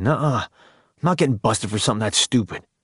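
ordinary talk

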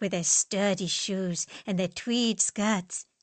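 ordinary delivery

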